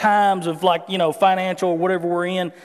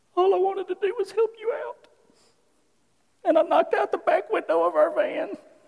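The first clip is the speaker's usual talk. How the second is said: put-on sobbing through words, very high tearful voice; 13 semitones higher, 4 dB quieter than usual. Retelling what his wife said on a phone call: imitating wife crying. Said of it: "And she's crying".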